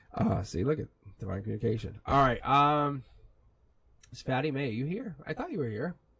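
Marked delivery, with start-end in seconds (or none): 4.1-6.0 soft voice, cracking and breaking mid-word. Calling out to find fatty may among the listeners, voice cracking. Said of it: "my voice is cracking now".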